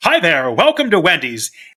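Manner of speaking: announcer-style radio delivery. Speaker imitates a drive-through worker greeting customers, in a radio announcer voice. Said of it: "had an incredible radio voice".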